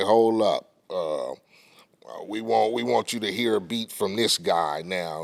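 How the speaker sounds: normal talking voice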